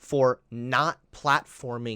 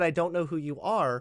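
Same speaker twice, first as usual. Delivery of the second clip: normal talking voice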